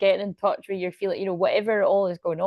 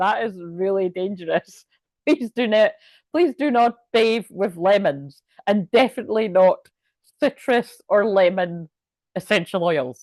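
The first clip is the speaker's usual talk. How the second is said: giggling through a serious tone. Warning listeners not to bathe with lemons: laughing while talking. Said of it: "although I can't stop laughing right now".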